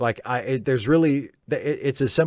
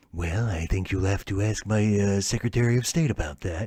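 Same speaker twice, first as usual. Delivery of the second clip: hushed, confused murmur, hesitating on well; 5 semitones lower, 5 dB quieter than usual. Imitating Reagan dodging a serious technical question: Ronald Reagan impression. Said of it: "Reagan is easy".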